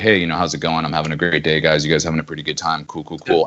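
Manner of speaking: very low, forced, put-on macho manly voice. Speaker shows how they could change their voice for their persona; more masculine voice. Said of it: "change like my voice where I can be like".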